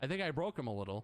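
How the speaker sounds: normal talking voice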